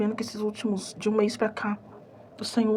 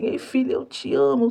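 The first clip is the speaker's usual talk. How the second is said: slow, tearful voice on the edge of weeping; 4 dB louder than usual. Recounting a dream, she repeats the words she heard, imitating a crying voice. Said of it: "ele tava com voz de choro".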